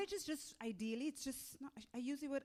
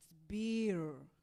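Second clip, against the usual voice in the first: put-on clear r in beer, lower; 5 semitones lower than usual. Retelling an accent coach's correction: imitating coach, beer with clear R. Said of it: "You're not pronouncing your R's".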